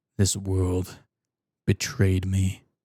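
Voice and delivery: very deep, low, brooding angst-filled voice. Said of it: "go into my deep voice and really feel the angst".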